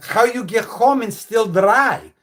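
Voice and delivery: put-on heavy, thick Greek accent. Retelling what the speaker's mom asked on a rainy day, in a thick Greek accent. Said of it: "thick Greek accent".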